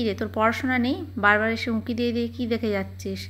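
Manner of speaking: ordinary talk, nothing marked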